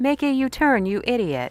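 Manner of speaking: high text-to-speech robot voice. Answering a viewer's request to say a line, TikTok AI voice. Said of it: "TikTok is more like".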